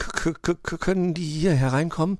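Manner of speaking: stammering. Hearing bats outside, Puh asks Wuschel a question, stammering. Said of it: "stammelte Puh".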